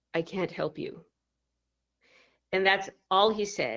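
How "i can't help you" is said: soft, flat, expressionless deadpan. Speaker retells what a medicine man said while looking at him: retelling a deadpan reply. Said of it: "he looks at me like deadpan and he says".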